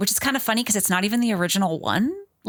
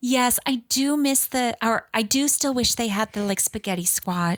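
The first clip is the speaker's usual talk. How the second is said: put-on little girl voice, higher pitched; 2 semitones higher than usual. Retelling a child's answer to an adult after dinner, imitating a little girl's voice. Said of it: "the little girl is talking like this".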